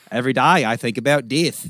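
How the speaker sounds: put-on Australian accent. Retelling what an australian goth said about death; australian accent. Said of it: "as far as Australian accents go, that was really good".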